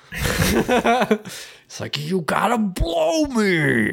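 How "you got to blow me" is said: put-on angry scream, high, rough and drawn-out. Retelling a recording of a man screaming at his ex-wife: imitating Mel Gibson screaming. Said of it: "yelling, like, screaming at her".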